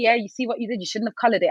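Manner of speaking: normal talking voice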